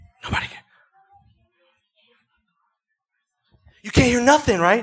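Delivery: whispering into the mic. Showing the difference between quiet and loud into the microphone: whispering. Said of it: "I'm whispering in the microphone".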